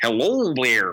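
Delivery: put-on broad, full-on, clichéd Canadian accent, laid on thick. Imitating a grade three teacher's greeting: strong canadian accent. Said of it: "the most Canadian accent ever".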